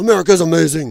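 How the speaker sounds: attempted Austrian accent. Retelling what a man said when pushed to attack a politician, doing an Arnold impression. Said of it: "I got to get my Arnold voice going".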